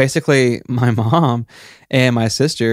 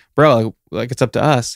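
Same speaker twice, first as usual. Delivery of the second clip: put-on grave, completely earnest, slow delivery. Retelling a line said while holding a huge knife: imitating a dead serious tone. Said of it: "dead serious".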